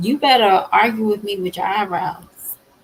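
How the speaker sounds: usual speaking voice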